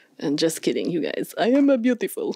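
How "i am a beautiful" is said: bad, poorly done, self-important put-on cartoon king voice. Joking to viewers in a video, doing a bad King Julian impression. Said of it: "That was supposed to be my King Julian impression".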